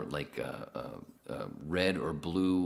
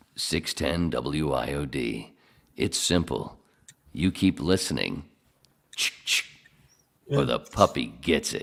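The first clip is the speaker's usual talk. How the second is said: slow radio announcer voiceover; 2 semitones lower, 4 dB louder than usual. Retelling a radio station's commercial rejoin line: imitating Greg Fadick's radio voiceover. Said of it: "you hear the voiceover going".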